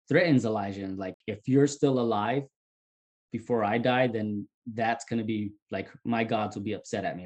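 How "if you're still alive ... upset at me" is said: ordinary talk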